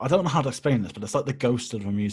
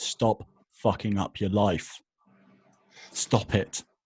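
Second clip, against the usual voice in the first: very slow, deliberate, clearly enunciated word by word. Sending a message to a musician who might be watching, very clear and slow. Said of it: "I'm going to say this very clearly and slowly".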